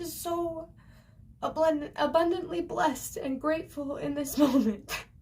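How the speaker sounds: talking through tears, tearful and crying. Speaker talking to their audience about feeling grateful, crying while speaking. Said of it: "sorry I'm crying".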